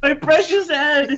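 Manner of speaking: very high, frantic, frenzied shriek. Voicing a character in a frenzy whose treasure was taken: yelling in character. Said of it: "he just yells out, "My precious!"".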